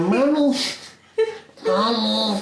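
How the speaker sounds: put-on gremlin-like small child voice, calling out high. Describing a film scene, imitating Brad Pitt talking like a child. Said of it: "con su voz de alfa y todo paila, de gremlin".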